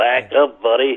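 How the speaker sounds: put-on American cowboy accent. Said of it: "you have to do it in the John Wayne accent".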